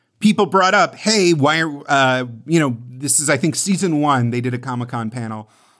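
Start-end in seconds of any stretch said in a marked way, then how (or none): none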